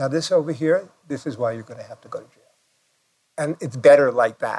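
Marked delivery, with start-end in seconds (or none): 0.0-2.4 mock flat, deadpan tone, quieter. Acting out how he says the line, imitating a deadpan delivery. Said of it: "It's all deadpan".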